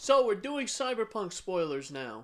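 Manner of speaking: very loud, high-pitched announcer voice. Warning listeners that Cyberpunk spoilers are starting: saying it very loudly. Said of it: "I'm saying it very loudly".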